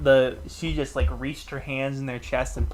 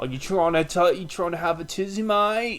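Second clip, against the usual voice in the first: put-on Australian accent with raised pitch; 4 semitones higher than usual. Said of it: "hippos are Australian for me".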